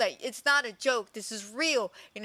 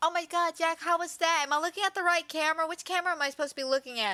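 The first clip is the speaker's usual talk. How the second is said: goofy, silly, pitched-up playing-the-fool chatter; 5 semitones higher than usual. Retelling how Lily acted during a commercial break: imitating a silly voice. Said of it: "Lily starts being so silly".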